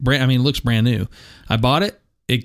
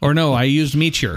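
put-on Irish accent. Naming the Irish phone carrier used before coming to the States, in an Irish accent. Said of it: "That's a good accent".

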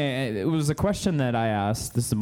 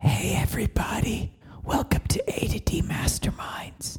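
slow, hushed, very quiet whisper, barely there; 9 semitones higher than usual. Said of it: "that's really quiet".

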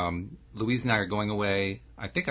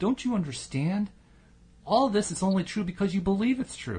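fed up, exasperated, voice shot way up; 12 semitones higher than usual. Retelling a man arguing with Joel, speaker voices the man: mock exasperated voice. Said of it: "in an exasperated voice".

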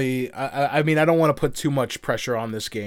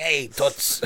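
put-on raspy Brooklyn wise-guy voice. Imagining what might make a man more likable: raspy brooklyn wise-guy voice. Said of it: "maybe had like a raspy".

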